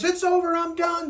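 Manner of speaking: high, shrill, loud, all-out top-of-voice scream. Retelling a couple bursting into an office: imitating a woman screaming. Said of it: "Woman screaming at the top of her voice".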